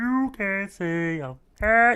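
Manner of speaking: high, drawn-out sound with bubbling throat. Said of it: "sounds like you got a bubble in your throat".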